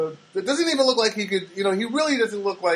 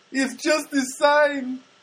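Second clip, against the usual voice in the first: terrible put-on Filipino accent, high, very slow; 7 semitones higher than usual. Retelling what a man told him, quoting him in a terrible Filipino accent. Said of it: "it's a terrible Filipino accent".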